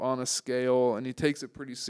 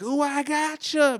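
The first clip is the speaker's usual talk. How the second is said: very high, shrill put-on country-accent holler; 7 dB louder than usual. Telling a friend about screaming neighbors, imitating one in a country voice. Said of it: "this like country ass voice was like".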